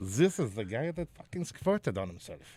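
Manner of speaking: bad, terrible put-on Dutch accent. Imagining what people who saw him on tv say, terrible dutch accent. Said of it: "That was a terrible accent".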